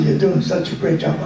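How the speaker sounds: plain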